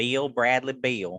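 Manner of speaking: name said in a Southern twang. Showing how a name sounds when said with a southern twang. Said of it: "If you say it with a Southern twang".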